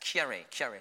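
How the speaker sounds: words rattled off quickly, run together at speed. Showing how to say the first name: said fast. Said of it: "say fast".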